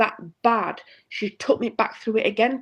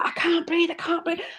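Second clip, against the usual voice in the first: put-on screaming out, high-pitched; 7 semitones higher than usual. Retelling a hypnosis session, retelling own screaming. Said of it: "I was screaming".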